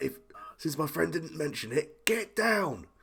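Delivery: high shout. A character shouts across at a vendor and a customer: shouting. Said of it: "raise his voice and just shout".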